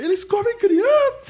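put-on shout. Recounting a movie scene, retelling a character's shout. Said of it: "que o cara grita".

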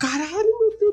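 very high-pitched, frantic, desperate panicked cry. Retelling a panicked reaction on hearing someone is coming over: imitating his own desperate panic.

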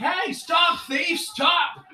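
very high, slow, drawn-out yell. Describing how bystanders react to a thief: imitating people yelling. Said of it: "they see it and they're like".

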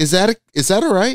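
high, mock-innocent tone.

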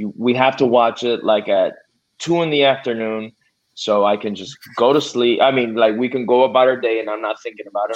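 ordinary delivery

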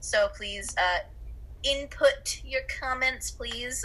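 put-on nerdy character voice. A host wrapping up with the audience, in a nerd voice. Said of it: "that was like a nerd voice".

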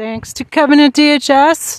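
very loud, drawn-out, sarcastic mocking tone. After being cut off, thanking Kevin at DHS, sarcastic.

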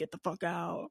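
fake spooky movie-style scary voice. Contrasting a movie line with a made-up version: put-on scary voice. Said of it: "a scary voice being like".

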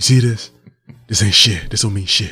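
soft, put-on Louisiana Southern accent. Retelling how a man brushed off his loss, the speaker imitates his Louisiana accent.

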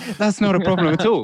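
high, loud, bright forced laughing.

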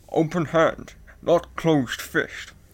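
put-on Scottish actor voice. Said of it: "the way that I always do Sean Connery stuff".

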